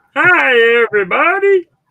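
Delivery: shrill, booming, high, sing-song goofy cartoon doctor voice. Trying the character's greeting despite doubting the impression: Dr. Nick voice. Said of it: "You made me fucking do that stupid voice".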